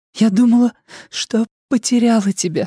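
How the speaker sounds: shaky whispered voice. A woman speaks to the man watching her walk toward him: trembling whisper. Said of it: "дрожащим голосом шепчет она".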